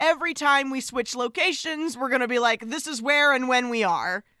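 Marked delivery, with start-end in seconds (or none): none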